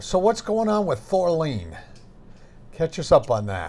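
knowing, sarcastic tone. Asking the other speaker for an update on Thorleen, sarcastic. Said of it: "if you haven't picked up on my sarcasm there".

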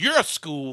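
put-on mad little kid, loud, high, furious scream. Retelling how a kid being told off lashed out at his mom: imitating an angry kid. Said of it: "the kid just gets real mad and goes".

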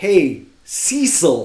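mock, swooping, jeering bellow at full lungs. Retelling yelling at a ballplayer from the upper deck: imitating yelling at a player. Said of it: "we're yelling at the top of our lungs".

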